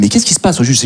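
ordinary talk

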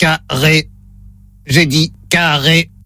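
low, flat, mechanical robot voice. On a phone word test, announcing the robot voice, then speaking as it: robot voice. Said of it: "Voix de robot enclenchée".

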